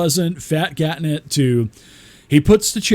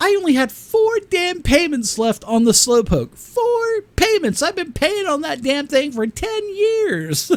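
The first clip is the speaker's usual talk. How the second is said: put-on very high voice, laughing through the words; 12 semitones higher than usual. Retelling his in-character complaint about the payments: retelling a line said while laughing. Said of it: "I started laughing when I said this".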